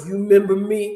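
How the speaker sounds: put-on deep bass voice of a huge man. Retelling a tall bearded man coming over to talk, imitating his deep voice. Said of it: "He comes over with this deep voice".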